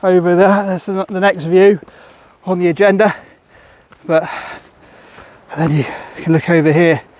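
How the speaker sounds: out of breath, panting. Pointing out the views while walking up steps, panting. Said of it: "Apologies for the panting".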